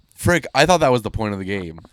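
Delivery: ordinary talk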